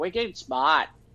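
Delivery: put-on New England accent. Telling what amused you about his attempt, imitate the Flash doing a New England accent. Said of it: "Listening to like the Flash do a New England accent".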